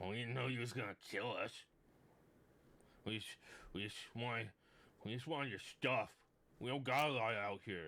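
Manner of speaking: goblin creature voice. Narrating a game scene, speaking as the goblin in a goblin voice. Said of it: "Um, and so the goblin kind of looks up and he goes, / Um, and so the goblin kind of looks up and he goes".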